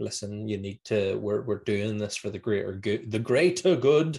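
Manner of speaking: normal talking voice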